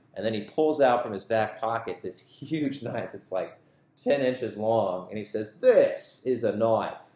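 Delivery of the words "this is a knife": loud put-on Australian accent. Retelling how a man pulls out a huge knife and speaks, Australian accent. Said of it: "That's my Australian accent".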